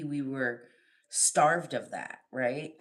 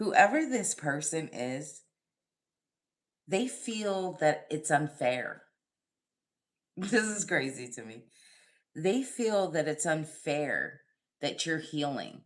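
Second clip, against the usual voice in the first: amused speech broken by laughter. Reading a card spread aloud, laughing while talking. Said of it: "I'm sorry that I'm laughing".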